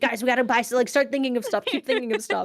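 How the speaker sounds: pushy, hurried, urgent yelling. Acting out what another person yelled at them while they laughed, retelling someone's yelling. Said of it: "Solo Mission's yelling at us".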